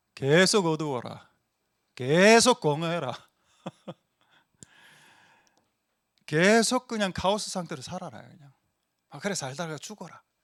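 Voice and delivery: put-on devil's manner of speech. Showing the audience how the devil would talk, imitating the devil's way of talking. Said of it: "마귀의 말투를 한번 배워봅시다".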